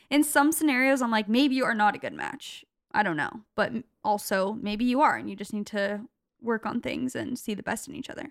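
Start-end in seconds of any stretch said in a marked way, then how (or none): none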